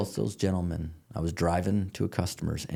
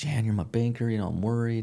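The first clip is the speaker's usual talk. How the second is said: put-on play-acted high, weepy blubbering like a big baby; 4 semitones higher than usual. Retelling a worried phone call to the banker: mock crying. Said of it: "I'm crying and carrying on and acting like a big baby".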